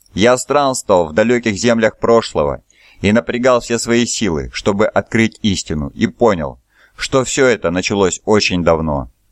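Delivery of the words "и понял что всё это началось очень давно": ordinary delivery, nothing marked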